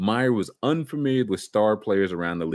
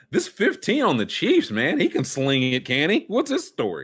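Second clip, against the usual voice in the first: animated, high, swooping, sing-song football coach voice; 6 semitones higher than usual. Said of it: "how would Urban say this?".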